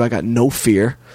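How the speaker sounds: ordinary talk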